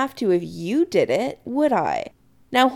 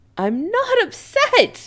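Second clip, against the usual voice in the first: very high, shrill protesting voice; 12 semitones higher than usual. A son answering his mother, shrill. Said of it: "Chris says shrilly".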